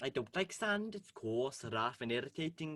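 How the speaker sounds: speaking in a Welsh accent. Trying out accents, doing Anakin Skywalker in a Welsh accent. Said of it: "Anakin Skywalker, but Welsh".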